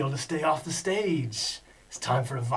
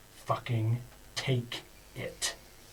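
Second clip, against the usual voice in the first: breathy whisper with lethal, deadly menace; 5 semitones lower, 7 dB quieter than usual. Voicing a character handing something over with a deadly look: deadly menacing delivery. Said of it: "says with his deadly look".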